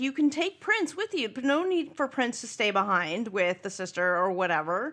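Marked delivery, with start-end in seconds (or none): 0.0-1.3 exasperated, fed-up, higher-pitched scream. Recalling watching a show and screaming at the TV, retelling the scream. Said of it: "I remember screaming at the T V".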